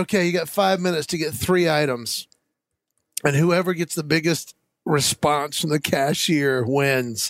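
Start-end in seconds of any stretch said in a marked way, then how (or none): none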